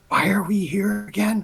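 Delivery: hushed whisper. A player's character speaks to Fuladar while the others are bent down: whispering. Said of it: "I'm gonna whisper to Fuladar".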